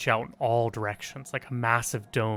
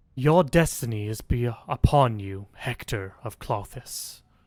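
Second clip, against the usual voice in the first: resounding, booming, slow female voice; 5 dB louder than usual. A narrator voices a voice from above addressing hector, in a booming female voice. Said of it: "a booming female voice speaks".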